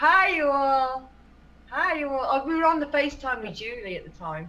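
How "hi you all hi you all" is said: very slow, drawn-out southern Mississippi drawl. Recalling greeting someone over FaceTime, Mississippi Southern accent. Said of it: "I was doing a Mississippi accent".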